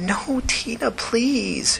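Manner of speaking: whispering plaintively. One woman pleads with another not to leave, in a plaintive whisper. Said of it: "she whispered plaintively".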